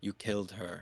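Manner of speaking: hushed whisper. Casting a message spell, whispering right behind a lord's ear: whispering. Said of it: "the hot breath and whispering".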